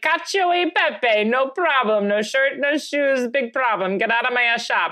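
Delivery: high-pitched mock Italian accent. Co-hosts joking about how a man sounds, Italian accent impression. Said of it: "That's what he sounds like".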